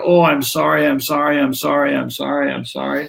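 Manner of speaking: mock over-apologizing tone. Acting out the so-called western mantra: mock over-apologizing. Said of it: "what Swami Rama sarcastically calls the".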